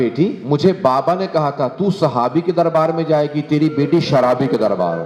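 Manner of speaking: ordinary delivery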